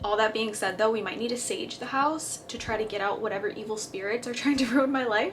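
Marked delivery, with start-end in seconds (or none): 4.3-5.3 speaking through laughter. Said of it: "Laughing, but it's not funny".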